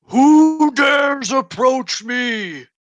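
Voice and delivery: resonant booming voice, very loud and very high. Game master voicing a voice from within the helmet the players circle, booming resonating voice. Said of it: "a resonating, booming voice coming from within".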